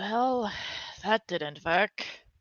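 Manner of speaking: grumbling mumble, muttered under the breath to oneself. A game narrator voices a character putting her stones back, muttering under her breath. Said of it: "you just kind of hear her muttering under her breath".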